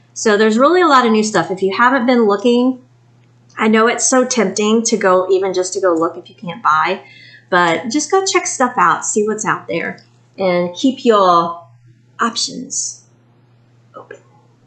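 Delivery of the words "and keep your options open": eerie, unsettling, slow, creepy drawn-out voice. Urging viewers to go see what's out there: creepy delivery. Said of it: "I don't know why I said it like that".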